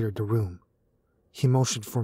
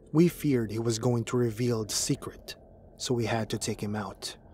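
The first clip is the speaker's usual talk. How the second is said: plain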